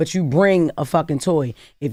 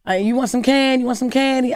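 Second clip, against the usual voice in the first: put-on rich old lady voice, higher pitched; 8 semitones higher than usual. Retelling how an old rich lady called the kids in: imitating Miss Cece. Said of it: "She used to call the kids in the house".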